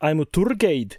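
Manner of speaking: put-on unconvincing Glasgow accent. Trying out a practiced accent for the listener to judge, in a bad Glasgow accent. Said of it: "I haven't nailed a Glasgow accent".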